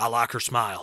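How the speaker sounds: put-on American accent, not his own. Retelling a Fast Five scene, imitating Dwayne Johnson's accent. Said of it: "And he says it like that".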